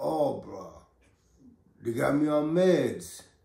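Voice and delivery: mock just-woke-up grogginess, very slow, groggy half-awake drawl. Retelling a phone call with a friend who sounded just woken: imitating Bryson's groggy just-woke-up voice. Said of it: "his voice was groggy, like he just woke up".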